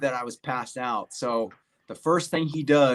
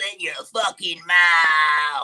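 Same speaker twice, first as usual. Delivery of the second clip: loud, very slow, put-on frog voice; 4 semitones higher, 6 dB louder than usual. Retelling doing the battalion frog voice impression for people: battalion frog voice impression. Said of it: "I do the impression".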